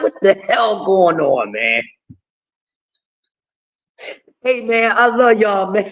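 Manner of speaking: mild, soft-spoken, flat one-note monotone delivery. Imitating how a boxer talks to cameras: Devin Haney voice. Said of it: "That's how he talk".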